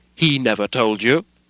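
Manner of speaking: sudden flush of anger, loud angry cry. Mr. hyde replies to the lawyer, crying out with a flush of anger. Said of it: "cried Mr. Hyde with a flush of anger".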